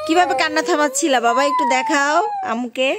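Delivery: put-on high, loud cooing baby talk.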